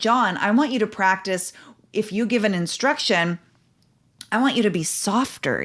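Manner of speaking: usual speaking voice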